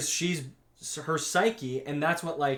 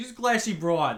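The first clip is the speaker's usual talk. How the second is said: put-on Boston accent; 4 semitones higher than usual. Co-host joking about a show character, repeating the remark in a Boston accent. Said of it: "In like a like a Boston accent".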